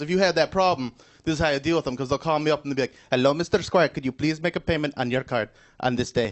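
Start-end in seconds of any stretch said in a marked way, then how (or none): 3.1-6.3 put-on polite, courteous Indian accent. Retelling how callers from India ask for card payments: imitating a caller from India. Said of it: "people from India calling me".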